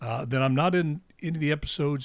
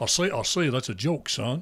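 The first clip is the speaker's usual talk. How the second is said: put-on cartoon rooster voice. Talking about what happened to the cartoon character, do a Foghorn Leghorn voice. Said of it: "I was doing Foghorn Leghorn".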